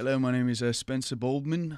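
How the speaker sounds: own fake put-on British accent. Introducing yourself in a game where talk is allowed only in British accents: own version of British accent. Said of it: "This is my version of a British accent".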